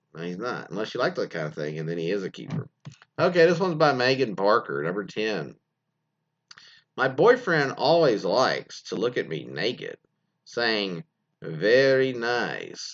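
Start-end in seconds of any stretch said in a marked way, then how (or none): 11.4-12.9 heavily trilled R in very, nice drawn out. Reading out Megan Barker's message about her boyfriend, quote him in a Borat impression with rolled R's. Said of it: "in his best Borat impression".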